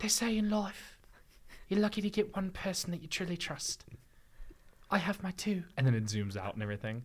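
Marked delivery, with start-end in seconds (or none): 0.0-5.6 put-on very high little-girl voice, British accent. Recalling a movie's ending, quoting the little girl in a put-on British accent. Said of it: "in a British accent".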